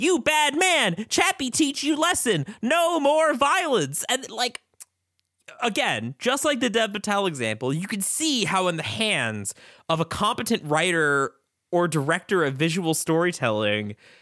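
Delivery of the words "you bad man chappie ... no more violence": put-on screaming character voice, higher pitch. Retelling a movie scene where Chappie beats someone: imitating Chappie screaming. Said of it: "he's screaming".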